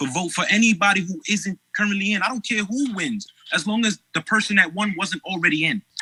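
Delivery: exasperated outpouring.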